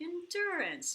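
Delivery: very high, bright, cheerful, happy voice. Announcing this week's class theme, endurance, in a happy sounding voice. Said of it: "I'm saying it with a happy, happy sounding voice".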